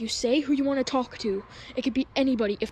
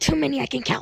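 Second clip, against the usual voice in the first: put-on creepy clown voice; 2 semitones higher, 3 dB louder than usual. Voicing a character answering through a microphone: Pennywise voice. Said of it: "Pennywise, how many kids have you eaten?".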